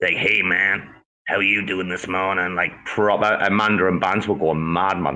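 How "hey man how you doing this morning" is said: rough, hoarse, raspy voice. Retelling how another speaker sounded when sick: raspy voice like Cosmos Joe. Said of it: "talking like Joe".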